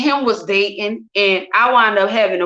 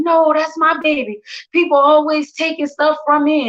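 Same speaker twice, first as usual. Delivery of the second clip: mock high-pitched, hysterical sobbing; 6 semitones higher than usual. Retelling how the father cried during a fight over the baby: imitating him crying hysterically. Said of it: "He crying".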